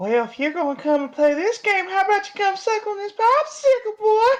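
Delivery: very high, creepy voice. Right after a Pennywise line in the chat, busting out a Herbert voice. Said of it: "bust out the voice".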